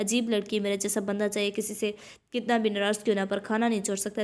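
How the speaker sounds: ordinary delivery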